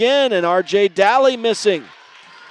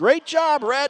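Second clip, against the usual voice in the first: high-pitched, mild mock yell with a proud tone. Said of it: "someone's mom was yelling".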